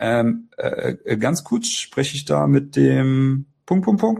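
slightly puzzled, unsure, confused tone. Showing how good salespeople open a phone call, slightly confused. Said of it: "sondern leicht verwirrt".

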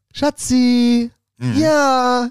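voice jumping way up high, with drawn-out "ja". Imitating a guy answering a call from his partner, voice goes up high. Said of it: "Dann geht die Stimme so hoch".

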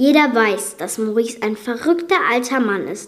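ordinary delivery

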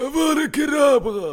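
very loud, shrill shriek at full volume. Asked to perform Voldemort, speaker gives a Voldemort impression. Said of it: "dann mach mal Voldemort".

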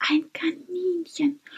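thrilled, high, hushed, excited whisper. Max, tiptoeing toward a rabbit among the vegetables: excited whisper. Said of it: "flüsterte Max und war plötzlich sehr aufgeregt".

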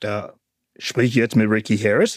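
put-on very low, deep voice, fast. Retelling a phone call one evening, quoting the caller: imitating a deep voice. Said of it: "er hat mit seiner tiefe Stimme gesagt".

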